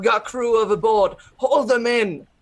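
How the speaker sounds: loud, high-pitched yelling. A player's character at the helm, crew gone overboard, shouting orders to the crew. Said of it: "That's what you're shouting?".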